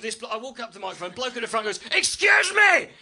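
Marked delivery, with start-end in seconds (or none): 2.0-2.8 piercing, very high, very loud Northern Irish voice. Retelling a man at the front heckling him on stage, in a shrill northern irish accent. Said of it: "in that understated Northern Irish accent".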